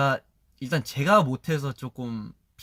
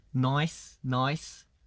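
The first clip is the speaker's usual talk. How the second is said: "nice" said in an Australian-style accent. Showing how to say "nice" the Australian way: Australian-style "nice". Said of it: "나이스를 이제 호주식으로 하면은".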